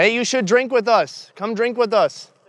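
high, far-carrying, loud yelling shout. Calling out to a man at a distance to invite him: yelling. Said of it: "I'm gonna yell that".

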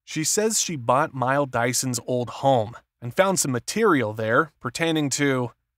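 ordinary delivery

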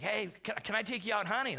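ordinary delivery

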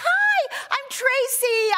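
mock sweetest, friendliest voice, very high. Retelling introducing yourself to someone at church, recreating a very friendliest voice. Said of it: "I said in my very friendliest voice".

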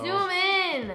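shouting. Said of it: "Don't yell at me".

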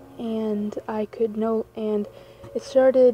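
plain reading voice

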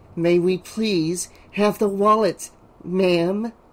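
through clenched teeth. Told to ask nicely for the wallet, Vera speaks through clenched teeth. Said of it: "Through clenched teeth".

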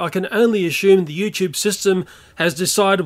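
ordinary talk

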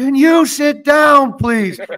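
very high, shrill, loud put-on scream. Telling the listener how their dad screamed at a man blocking the view, retelling a scream. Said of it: "your dad just screamed".

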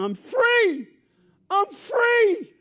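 very high, very loud, slow drawn-out yell. Telling a joke about a man just out of prison: retelling a man's shout. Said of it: "He's shouting".

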